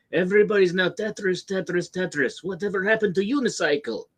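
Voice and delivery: high-pitched, put-on Russian accent. Recalling an old Tetris commercial, the speaker quotes the Russian guy in a Russian accent. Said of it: "the Russian guy being like".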